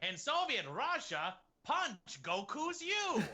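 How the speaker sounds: very high, swinging, swooping Russian accent. Answering a request to voice Goku landing in Soviet Russia: Goku with a Russian accent. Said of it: "has a Russian accent".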